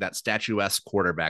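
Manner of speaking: ordinary talk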